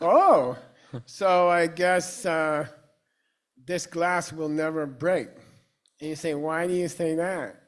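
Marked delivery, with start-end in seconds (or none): 0.0-5.3 loud, drawn-out, sarcastic, mocking tone. Giving an example of sarcasm in a lesson: sarcastic. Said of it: "it's sarcasm".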